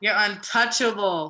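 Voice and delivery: emphatic chest-voice delivery.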